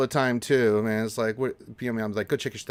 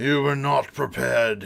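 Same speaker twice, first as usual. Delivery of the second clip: rough, gruff, creaky little put-on voice. Caught off guard, the speaker repeats the phrase in a little Warhammer voice. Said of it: "A little Warhammer voice there".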